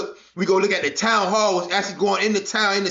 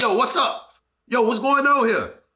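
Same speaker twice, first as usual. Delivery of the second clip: ordinary delivery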